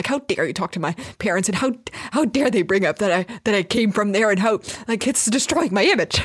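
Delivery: angry, sulking character voice. Acting out Cave Kevin sulking in the corner: angrily sulking Cave Kevin. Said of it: "angrily sulking in the corner and being like".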